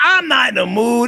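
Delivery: loud, high, creaky delivery.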